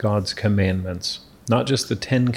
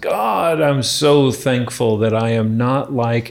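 put-on raised voice, mock loud proclamation; 2 semitones higher, 3 dB louder than usual. Speaker acts out the Pharisee's prayer in the parable, retelling with raised voice. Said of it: "raises his voice and says".

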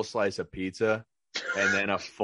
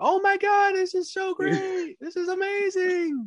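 very high-pitched, put-on gushing excitement. Speaker acts out thanking someone for an unwanted gift, put-on fake excited voice. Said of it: "So I do the voice like".

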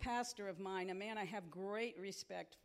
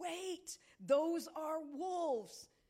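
put-on raised, high-pitched yelling; 8 semitones higher, 4 dB louder than usual. Recounting hearing wolves in a parking lot and warning everybody: retelling a yell. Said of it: "And I started yelling".

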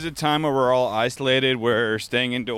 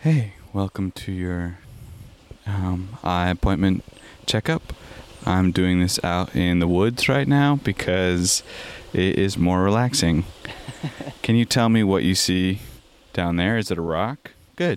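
ASMR roleplay voice; 4 semitones lower than usual. Playing an eye appointment checkup out in the woods: asmr voice. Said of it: "do a little bit of, uh, A S M R for them".

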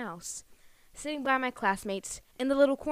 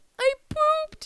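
very high, tearful, sobbing bawl; 4 dB louder than usual. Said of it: "literally bawling my eyes out".

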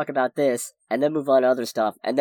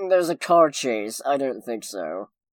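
snooty, dismissive, thoroughly unimpressed sneer. Mocking a director who hates superhero movies, mock-snooty Martin Scorsese voice. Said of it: "he'd still turn his nose up at it and be like".

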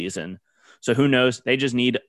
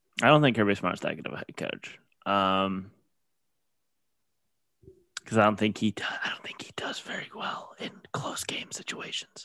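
speaking in a whisper, quieter; 2 semitones lower, 8 dB quieter than usual. Giving an opinion on a head coach to another speaker: whispering. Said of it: "Why is A S M R doing here?".

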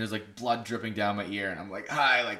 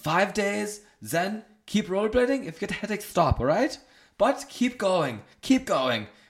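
put-on German accent, pitched up high; 10 semitones higher, 4 dB louder than usual. Retelling the doctor's instructions: imitating the doctor, accent sounding German. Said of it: "This is really sounding German now".

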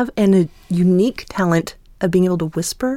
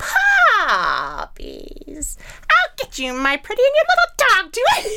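shrieking, very high-pitched and loud; 14 semitones higher than usual. Showing off the voices they can do, loud Wicked Witch of the West. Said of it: "Wicked Witch of the West, which is really loud".

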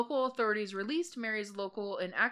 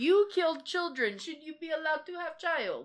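pitched-up put-on broken-English Russian accent; 7 semitones higher, 3 dB louder than usual. Discussing whether Mary should keep her child, the speaker questions her in a Russian accent. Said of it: "Why did you go Russian?".

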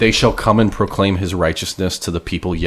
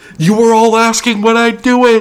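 put-on triumphant screaming, higher and louder; 8 dB louder than usual. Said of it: "It's like God just screaming".

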